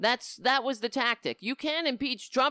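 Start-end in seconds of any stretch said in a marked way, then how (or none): 1.4-2.5 mock rapid yelling, higher and faster. Mocking what people on Fox News were yelling, imitating fast, loud talking. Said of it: "I'm speaking really fast and loud".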